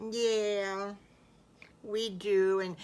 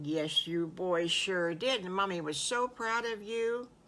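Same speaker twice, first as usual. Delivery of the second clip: plain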